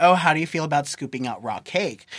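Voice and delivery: ordinary talk, nothing marked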